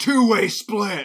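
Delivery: half-hearted, mild, high-pitched scream. Retelling a movie scene where the character Dredd screams: imitating Dredd screaming. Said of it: "Dredd just screams".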